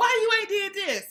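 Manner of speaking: badgering, nagging, accusing tone, pitched way up. Advising not to keep nagging someone, acting it out in mock-nagging, accusing tone. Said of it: "don't keep nagging like".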